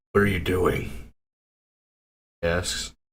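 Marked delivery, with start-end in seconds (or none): 0.1-0.9 rough, coarse voice. A storyteller voices a man in a cloak asking a question; rough voice. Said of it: "Rough voice".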